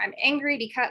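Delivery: ordinary delivery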